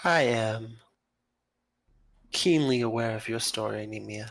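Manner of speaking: soft-spoken character voice. Speaking in character to Nemia after introducing herself, soft-spoken. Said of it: "She seems soft spoken in the way she speaks".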